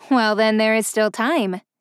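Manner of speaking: ordinary delivery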